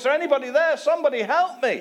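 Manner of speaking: shrill, very high scream at top of lungs. Telling a joke, acting out a man dangling from a cliff root, retelling a scream for help. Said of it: "he's screaming at the top of the voice".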